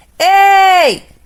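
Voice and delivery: full-chested call, very high, very loud, drawn-out. Explaining how a mother calls a child, calling ei in full chest voice. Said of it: "voz de peito... você está chamando alguém".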